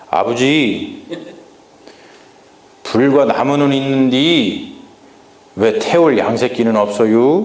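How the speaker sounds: Chungcheong dialect, very drawn out. Acting out a question asked to a father, in Chungcheong dialect. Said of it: "제가 좀 충청도 사투리로 한번 해볼 거예요".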